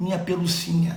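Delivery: affectionate, tender, creepy put-on demonic voice. Quoting a woman's pet name for someone after a protest: tender, put-on demonic voice. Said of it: "tipo aquele negócio de carinhoso, mas com aquele sotaque de demônio".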